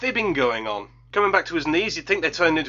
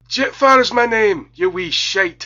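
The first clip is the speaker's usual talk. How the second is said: put-on loud, slow, strong Scottish accent; 4 semitones higher, 7 dB louder than usual. Speaker reviewing the film voices the robot Jetfire with a Scottish twang. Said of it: "he's got a bit of a Scottish twang".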